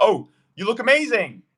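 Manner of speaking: statement delivered with rising, question-like uptalk. Mocking how a listener might sound when approaching someone, with rising, question-like inflection. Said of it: "with the interrogative inflection where your statements sound more like questions".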